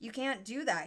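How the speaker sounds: voice breaking, high, panicked, cracked cry. Winston cries out to O'Brien on first seeing the cage, high, cracked voice. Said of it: "in a high, cracked voice".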